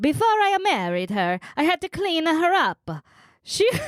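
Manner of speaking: bad put-on Italian accent. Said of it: "I wanna see if I can do better".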